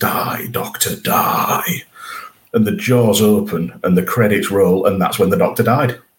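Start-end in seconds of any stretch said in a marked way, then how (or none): 0.0-1.8 hissed out through and through, very hissy voice. Recounting an episode's cliffhanger, quoting the Zygons closing in on the Doctor, very hissy Zygon voice. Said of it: "in that very hissy voice".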